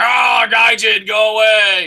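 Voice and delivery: big, very slow, drawn-out, scary bellow. Retelling scaring off two drunk guys, in a put-on big scary gaijin voice. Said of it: "with big fucking gaijin scary voice".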